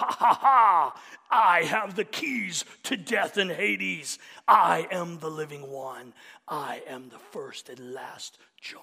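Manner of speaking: put-on very loud, booming, cruel, sadistic gloating. Speaker describing how Jesus does not speak to John, mock-sadistic Jesus gloating. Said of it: "with this sadistic tone".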